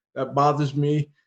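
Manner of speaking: ordinary talk, nothing marked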